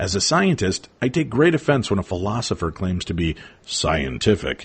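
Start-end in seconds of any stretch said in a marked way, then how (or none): 3.7-4.7 voice dropped low on the word scientific. A scientist quoting a philosopher's claim, voice dropped for the quoted word. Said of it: "That's why I'm dropping my voice like that".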